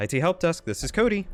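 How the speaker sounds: professional phone voice. Demonstrating how he answers the it help desk phone: higher-pitched phone voice. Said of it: "it's a lot higher pitched".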